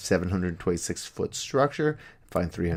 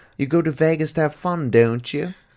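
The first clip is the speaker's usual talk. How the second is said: loud, put-on British accent; 8 semitones higher, 6 dB louder than usual. Reading a Welshman's quote from a news story: put-on British accent. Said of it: "I'm gonna try and do a British accent".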